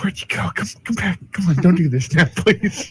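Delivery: high, desperate, pleading, furtive half-whisper. Their character calls after Maggie, who vanished into the crowd, half-whispering desperately. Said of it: "I'm probably like whispering".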